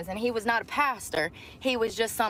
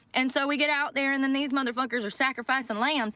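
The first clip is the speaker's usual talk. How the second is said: plain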